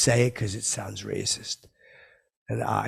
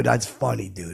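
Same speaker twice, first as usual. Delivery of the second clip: ordinary delivery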